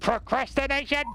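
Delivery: harsh robotic put-on voice. Speaker announces the Dalek voice, then says the word in Dalek voice. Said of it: "in the Dalek voice".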